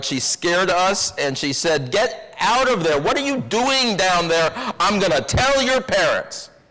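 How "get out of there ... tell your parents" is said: shrill storybook witch voice. Recalling a woman who scared us, shouting in a Wicked Witch of the West voice. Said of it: "in what I remember as a sort of Wicked Witch of the West voice".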